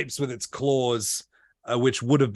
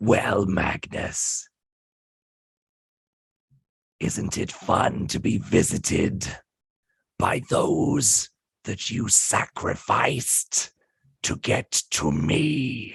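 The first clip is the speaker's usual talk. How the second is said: put-on rasping, rough, creaky old hag voice; 3 semitones lower than usual. Voicing a hag speaking to Magnus from all sides: voice of the hag. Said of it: "a voice of the hag that says".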